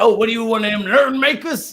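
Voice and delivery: put-on Louisiana Baton Rouge accent, very high. Act out the GM asking you a question, in an attempted Baton Rouge accent. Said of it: "the G M's got this very Baton Rouge, I can't do that accent".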